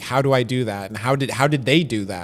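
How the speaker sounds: ordinary delivery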